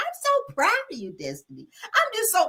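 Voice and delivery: very high-pitched, silly, sing-song, fake gushing, mocking. Retelling what a castmate said to Destiny: mocking Tisha's voice. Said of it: "in that stupid ass voice".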